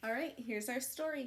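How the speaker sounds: plain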